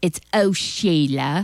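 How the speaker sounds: badly done put-on English accent. Radio host on a Friday night show, in her bad English accent. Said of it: "my bad English accent".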